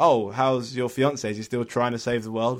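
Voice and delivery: thick, pointed, heavy sarcasm. Retelling what someone asked at work about the fiance: imitating a sarcastic remark. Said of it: "Very sarcastically".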